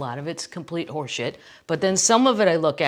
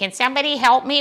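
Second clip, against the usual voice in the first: put-on Michigan accent, pitched high and called out; 8 semitones higher, 4 dB louder than usual. Imagining Gretchen floating alone in Lake Michigan: Gretchen with Michigan accent. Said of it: "with that Michigan accent".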